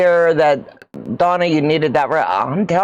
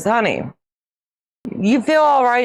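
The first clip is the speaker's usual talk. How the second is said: put-on dead serious tone, no joking, pitched up; 6 semitones higher than usual. Retelling being asked whether feeling all right: imitating a dead serious tone. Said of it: "he looks at me dead serious and he says".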